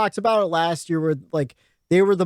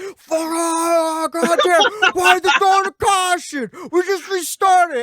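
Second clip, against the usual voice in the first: mock screaming, higher and louder; 12 semitones higher, 4 dB louder than usual. Retelling watching the race on sunday: imitating own screaming. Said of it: "I'm just screaming".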